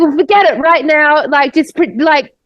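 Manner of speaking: put-on angry outburst. Retelling how a woman was angry at the speaker for playing, mock-angry. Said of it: "Like really angry".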